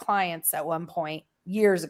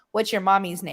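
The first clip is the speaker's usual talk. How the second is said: plain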